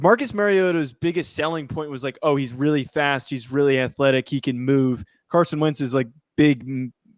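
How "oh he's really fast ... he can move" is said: ordinary delivery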